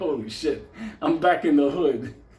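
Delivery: speech delivered while cracking up with laughter. Retelling a tense moment at the post office, imitating laughing while talking. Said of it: "I'm just laughing like".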